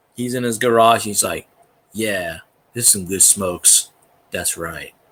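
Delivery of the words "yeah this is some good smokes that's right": relaxed, chilled-out, mellow, laid-back hippie voice. Imitating a YouTuber in his garage, mellow hippie voice. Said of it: "I swear he could be a hippie".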